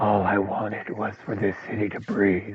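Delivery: low, raspy delivery. Showing a line from a Daredevil monologue: raspy Daredevil voice. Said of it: "in that raspy".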